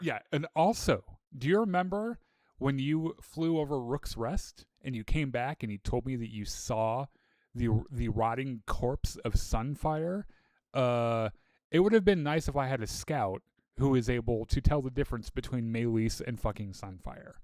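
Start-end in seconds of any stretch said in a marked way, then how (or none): none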